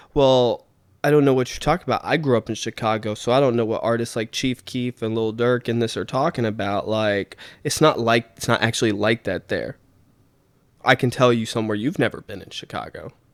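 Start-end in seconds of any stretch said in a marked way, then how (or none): none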